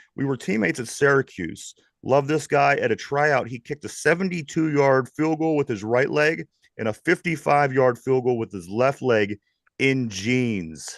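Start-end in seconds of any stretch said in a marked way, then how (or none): none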